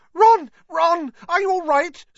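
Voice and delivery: very high, loud squealing cry. Narrator reads a girl calling to a boy hit by his own spell, squealing. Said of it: "squealed Hermione".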